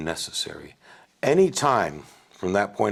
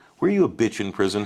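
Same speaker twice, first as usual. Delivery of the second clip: plain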